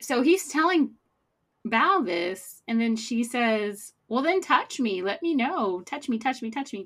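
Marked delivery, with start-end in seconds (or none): 4.1-6.8 put-on giddy, childlike little kid voice. Retelling what Val said to him, imitating Val's giddy voice. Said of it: "she says it in a giddy voice".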